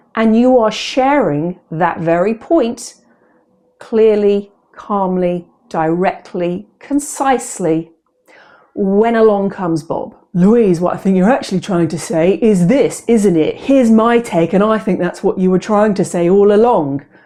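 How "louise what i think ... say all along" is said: overbearing, cutting-in, talking-over voice. Acting out Bob cutting in while Louise makes her point; imitating Bob. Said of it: "That's my impression of Bob".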